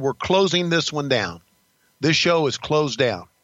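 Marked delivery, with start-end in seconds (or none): none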